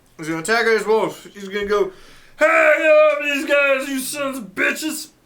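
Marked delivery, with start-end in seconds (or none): 2.4-5.1 high, slow, every word stretched cartoon character voice. Voicing a character attacking a wolf: Fat Albert voice. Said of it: "he turned into Fat Albert".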